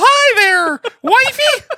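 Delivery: high, squeaky cartoon mouse impression. Speaker acting out greeting his wife, in Mickey Mouse voice. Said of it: "you sound like Mickey Mouse".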